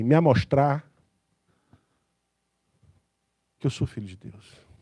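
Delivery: put-on northeastern Brazilian accent. Preacher imitating how Pastor Sam would say it, imitating Pastor Sam's northeastern accent. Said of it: "com aquele sotaque nordestino, falaria assim".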